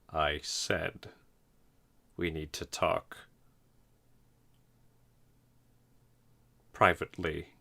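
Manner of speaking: low, deep-sounding manly voice. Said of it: "in this low-ass manly voice".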